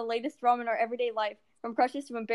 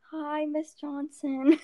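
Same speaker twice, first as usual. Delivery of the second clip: mock bashful, shy, timid voice; 4 semitones higher than usual. Showing how a shy greeting to a teacher sounds: imitating a shy voice. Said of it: "like when you talk to a teacher and you're just like".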